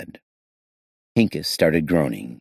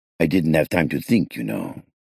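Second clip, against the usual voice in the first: usual speaking voice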